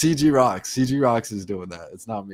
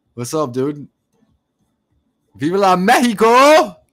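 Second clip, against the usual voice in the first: booming, shrill, very high, excited celebratory yell; 9 semitones higher, 9 dB louder than usual. Greeting someone who is in mexico, excited yelling. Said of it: "Sorry, I'm yelling".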